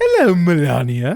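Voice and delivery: put-on high-pitched cartoonish voice. Trying out a cartoon impression in conversation: Stewie Griffin voice. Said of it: "Let me see if I can do uh, Stewie Griffin".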